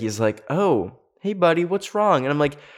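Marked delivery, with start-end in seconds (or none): 0.5-2.2 casual, breezy, nonchalant, pitched up. Retelling what the counselor said on finding the speaker: imitating a nonchalant counselor. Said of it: "very nonchalant about it".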